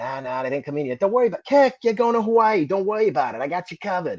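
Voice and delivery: put-on Boston accent. Retelling what the man he kept asking about his orders said, in a Boston accent. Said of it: "He had that Boston accent".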